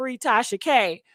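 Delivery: ordinary talk, nothing marked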